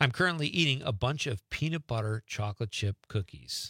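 ordinary talk, nothing marked

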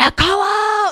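high, loud, hot-tempered angry yell.

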